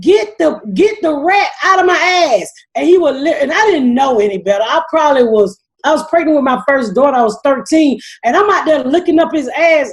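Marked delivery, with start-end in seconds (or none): 0.0-2.5 acted frenzied high, frantic yelp, kept small. Retelling how a high neighbor would scream about a rat: imitating someone screaming. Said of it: "would get butt ass naked and scream".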